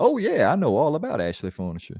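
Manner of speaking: put-on sing-song, swooping Southern dandy accent. Talking about how North Carolinians talk, the speaker imitates the wrestler; Hurricane Helms impression. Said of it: "But that's how he talks too. He's like".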